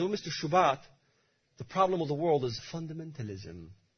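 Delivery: put-on English accent. Speaker quotes a colleague answering him, Mr. Shubat: English accent. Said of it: "with an English accent".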